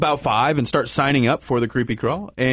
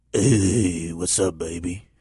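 very low, creepy, drawn-out prison-creep voice; 9 semitones lower than usual. Asked to let them hear a creepy voice, doing a creepy voice. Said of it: "Let me hear your creepy voice".

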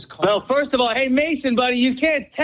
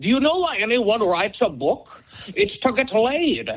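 put-on Scottish film-star accent. Retelling a film scene where Connery speaks to the kid, Connery imitation. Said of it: "Not a bad Connery imitation".

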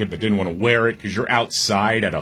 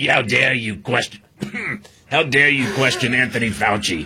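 put-on voice, thoroughly indignant and affronted; 2 semitones higher than usual. Imitating someone indignantly defending Anthony Fauci: imitating Anthony Fauci's voice. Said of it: "So you do the voice better than me".

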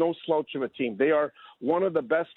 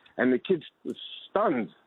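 ordinary talk

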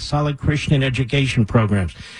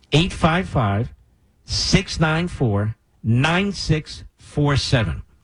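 said slowly, drawn out. Repeating a donation phone number for listeners, said slowly. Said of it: "Let me say that slowly".

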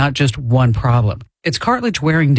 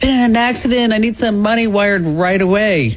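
put-on pitched-up, panicking child voice; 8 semitones higher than usual. Speaker asks listeners to picture a call from their kid, mock-panicked kid voice. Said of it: "your kid's voice panicking".

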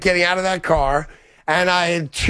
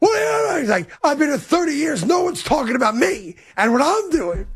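put-on angry voice, higher pitch; 8 semitones higher than usual. Retelling how a colleague reacted to everyone watching the video: imitating Mike being mad. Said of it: "And he was so mad".

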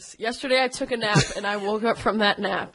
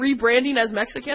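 normal talking voice

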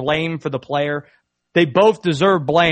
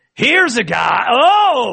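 put-on broadcaster voice, higher in pitch and louder; 7 semitones higher, 5 dB louder than usual. Imagining a broadcaster mistakenly walking into the women's bathroom, Chris Collinsworth impression. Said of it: "That's my impression of it".

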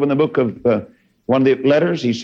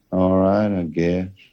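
put-on glum, low, sad, dull voice; 5 semitones lower, 3 dB quieter than usual. Retelling a young teen girl's answer when asked how she is, imitating a sad-sounding girl. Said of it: "that old dad sounding".

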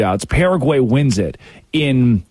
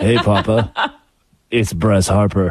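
put-on cute sexy voice, lower; 5 semitones lower than usual. Quoting a video greeting from bryce harper: imitating a cute, sexy voice. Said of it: "All cute and sexy like".

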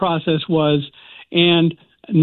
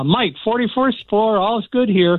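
put-on shout, higher pitch; 4 semitones higher than usual. Retelling a friend calling floor numbers up the stairs: imitating a friend shouting up. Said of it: "He was shouting up to me".

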